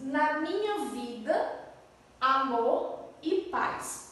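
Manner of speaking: slow, drawn-out, unhurried delivery.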